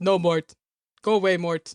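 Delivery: low-pitched cartoon royalty voice. Retelling a bit with a girl, answering her in a King Julian voice. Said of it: "King Julian was like".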